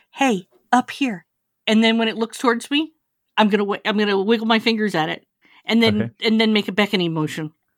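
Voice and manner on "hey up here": whispered, slower. Playing a game, the character whispers to a distant rat, whispering. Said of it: "I am going to whisper".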